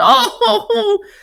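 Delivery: very high, ridiculous, upset wailing cry.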